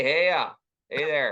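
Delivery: Minnesota accent, exaggerated and laid on for show. Answering whether one says Hiya like in Fargo: put-on Minnesota accent. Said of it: "into that, that accent right now".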